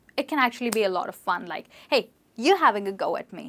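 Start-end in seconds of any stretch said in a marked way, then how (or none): 1.8-3.5 light, breezy, playful teasing tone. British english lesson on a question used with friends, in a light, playful voice. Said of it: "in a light voice with friends... a very playful way".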